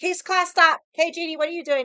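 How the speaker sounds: booming, high, very loud scolding voice. Retelling how the instructor stopped the entire class: imitating the instructor stopping class. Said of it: "fucking stopped the entire class".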